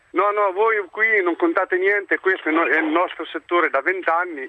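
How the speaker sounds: plain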